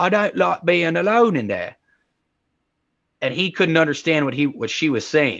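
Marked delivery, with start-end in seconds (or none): 0.0-1.8 put-on very British Cockney accent. Retelling how a young girl's words came out: very British Cockney accent. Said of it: "she has a very British Cockney accent".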